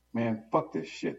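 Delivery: high-pitched yelled outburst. After a baby's walker is hit in the shooting, a character shouts. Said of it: "Min shouts".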